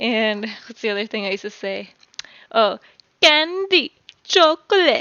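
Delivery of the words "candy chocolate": put-on Spanish-accented English, higher pitch. Retelling what she said as a kid: imitating her childhood Spanglish accent. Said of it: "come back with the Spanglish accent".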